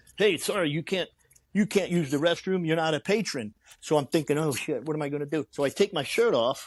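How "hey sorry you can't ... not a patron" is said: put-on broken English, European accent. Retelling a restroom run-in with Randy Spears, Randy Spears's broken English accent. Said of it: "in somewhat of a broken English accent".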